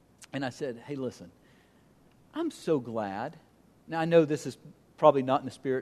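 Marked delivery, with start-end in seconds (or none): 0.9-3.4 imitated sarcastic tone. Retelling own words to a man who pushed about Bible versions: retelling own sarcastic remark. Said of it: "pick up the sarcasm here".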